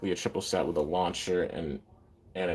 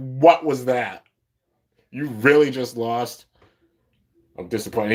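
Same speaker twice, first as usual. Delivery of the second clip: put-on angry voice, higher and louder; 5 semitones higher, 7 dB louder than usual. Retelling how Louis reacts to a loss: imitating Louis angry. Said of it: "He's mad".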